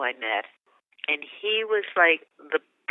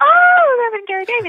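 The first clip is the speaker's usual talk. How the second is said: put-on very high, very loud, shrill gushing teen-girl squeal; 10 dB louder than usual. Retelling her teenage self hearing a blues musician would perform, typical teenage girl voice. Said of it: "in typical teenage girl voice".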